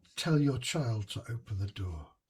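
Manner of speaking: hushed half-whisper. Speaker half-whispering an instruction to another player during a game, half-whispering. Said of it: "I'm going to just whisper to Charlie".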